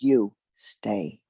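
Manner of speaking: very quiet, hushed, under the breath. Retelling how a teacher kept the speaker back: imitating a quiet order. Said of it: "he very quietly said".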